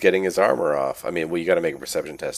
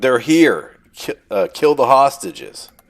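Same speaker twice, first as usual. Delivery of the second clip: screamed, much higher and louder; 8 semitones higher, 9 dB louder than usual. Game master voicing a bad guy who spots the spirits, screaming. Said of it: "This guy screams out".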